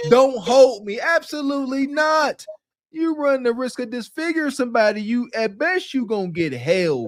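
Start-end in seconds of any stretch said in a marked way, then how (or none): 0.1-1.0 put-on yelled-out screaming outburst. Retelling what she screamed while being held back: imitating someone screaming. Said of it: "wanna start screaming".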